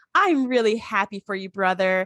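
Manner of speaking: falsely happy, insincere cheerful tone. Retelling a jealous character's line: fake smile, falsely happy. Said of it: "puts this big fake smile on and goes".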